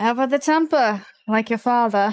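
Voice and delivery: talking through a chuckle. A game master voicing a man who greets Talia: chuckling while speaking. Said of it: "And just chuckles".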